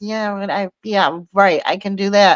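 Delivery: unconvinced, sarcastic, dismissive brush-off agreement. Imitating how everyone answers the advice: imitating someone sarcastic.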